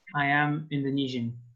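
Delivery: ordinary talk, nothing marked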